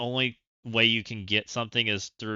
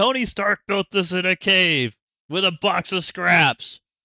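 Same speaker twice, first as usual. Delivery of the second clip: very loud, high, furious, frustrated shouting; 8 semitones higher, 9 dB louder than usual. Retelling a man yelling at the scientists because his suit won't turn on; acting out frustrated yelling. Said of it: "he's over there yelling at the scientists".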